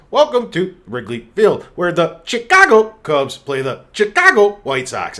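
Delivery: loud, swooping, terrible cheesy sports announcer voice. Mocking the stale broadcast voiceover heard in a video game, announcing the matchup to the player in a cheesy sports announcer voice. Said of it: "really terrible uh, voiceover guy who used to be like".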